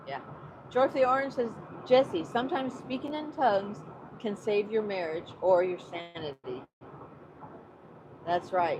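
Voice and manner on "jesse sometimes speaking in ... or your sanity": ordinary talk, nothing marked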